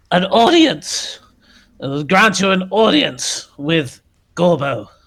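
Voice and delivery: high, proclaiming character voice. The voice returns after loud muttering, booming amplified voice. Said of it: "this voice is amplified incredibly loudly".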